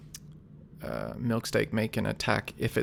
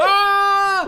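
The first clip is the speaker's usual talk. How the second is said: very high, loud yelling. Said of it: "yelling as he runs out".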